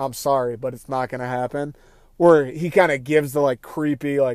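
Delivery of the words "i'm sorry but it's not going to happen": play-acted flat, plain, matter-of-fact monotone. Retelling a movie kidnapper's answer to a plea: imitating matter-of-fact delivery. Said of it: "he talks very f-, matter-of-factly".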